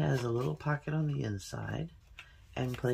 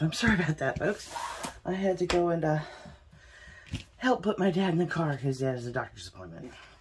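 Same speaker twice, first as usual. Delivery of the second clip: out of breath, winded, catching air; 3 semitones higher, 5 dB louder than usual. Back after helping put their dad in the car, apologizing to folks: out of breath. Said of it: "Now I'm out of breath".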